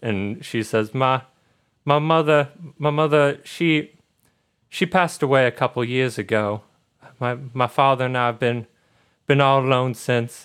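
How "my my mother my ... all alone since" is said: put-on choked-up, faltering girl's voice, words catching, near tears. Voicing a girl telling the party her mother died: acting choked up. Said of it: "she gets a little bit choked up".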